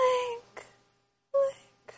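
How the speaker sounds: very high, feather-soft, breathy voice. Recalling a game's shrine moments, calling out the hero's name in breathy Zelda voice. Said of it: "you'd hear Zelda's breathy voice".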